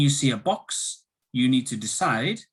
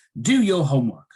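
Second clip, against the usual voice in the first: pitch dropping at the end on homework; 2 semitones higher, 5 dB louder than usual. Explaining the intonation of commands, giving an example with falling intonation. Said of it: "It goes down".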